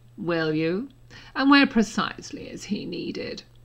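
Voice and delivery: frosty, cold, icy, unfriendly tone. In a read story, a man answers someone who has come for a boy, cold voice. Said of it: "Snape said in a cold voice".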